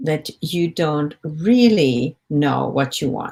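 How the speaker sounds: emphasized really, drawn out and slow.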